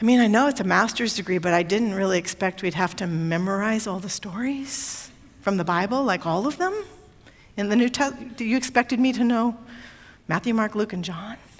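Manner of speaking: confiding stage whisper, soft and hushed. Retelling what was said to the supervising professor after an exam: retelling a half-whisper. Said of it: "I say to him in a kind of a whisper".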